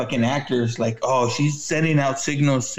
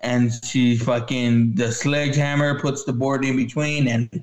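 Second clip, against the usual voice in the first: ordinary delivery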